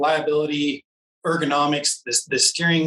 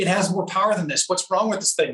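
mock exasperated, frustrated yelling outburst; 4 semitones higher than usual. Recalling struggling up hills on an underpowered bike: retelling yelling at the bike. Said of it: "I'm yelling at the bike".

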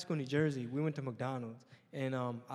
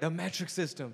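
ordinary talk, nothing marked

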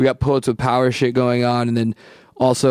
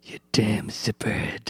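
hushed whisper with jaw clamped shut; 2 semitones lower, 9 dB quieter than usual. Mock-threatening a friend in Maui during a shout-out, do a closed-jaw Clint Eastwood impression. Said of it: "didn't, like, open your jaw at all".

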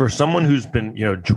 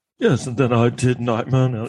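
put-on British accent. Speaker describing an actor going through his career: Johnny Depp British accent. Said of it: "he sounds like a British guy".

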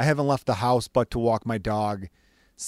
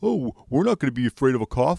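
mocking, dim-witted caricature voice; 3 semitones higher, 3 dB louder than usual. A podcast host ranting about some states' leaders, doing a mocking impression of idiots. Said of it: "that's my impression of those pieces of shit".

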